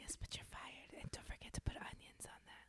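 hushed whisper. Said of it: "a quiet firing is, is just whispers".

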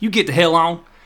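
high, loud, fast Eastern Kentucky dialect. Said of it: "my Eastern Kentucky dialect".

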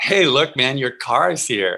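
mock teasing, acted-out joking tone. Retelling tapping someone whose limo has arrived, retelling a joking tease. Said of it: "So I jokingly tap him and I go".

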